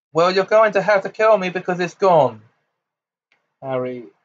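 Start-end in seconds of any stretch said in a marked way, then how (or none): 0.1-2.4 all-out roaring, high-pitched bellow. Answering someone who threatens his life, roaring shout. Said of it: "Harry roared as he shouted it".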